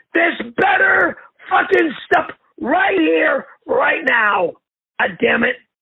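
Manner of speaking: mock-livid, furious ranting. Retelling what he shouted about an unwanted food delivery, retelling a livid rant. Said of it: "but I am livid".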